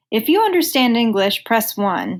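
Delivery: ordinary talk, nothing marked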